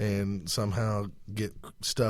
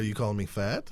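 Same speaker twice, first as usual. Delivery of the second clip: plain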